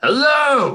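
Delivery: big, booming delivery, pitched very high. Player character, told to be louder, greets a giant creature in a booming voice. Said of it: "As in a booming voice".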